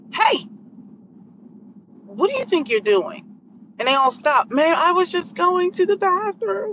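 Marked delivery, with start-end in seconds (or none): 0.1-3.2 strict, stern scolding tone. Retelling walking over to some young people, the speaker quotes their past self in a put-on stern mom voice. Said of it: "I had to put on my mom voice".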